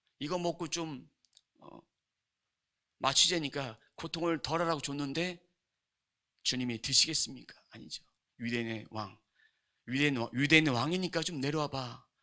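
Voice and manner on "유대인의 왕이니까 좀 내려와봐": derisive, teasing, mocking jeer. Preaching on a Bible verse, voicing the taunts in a mock-taunting tone. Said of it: "이렇게 희롱하는 그런 말투로".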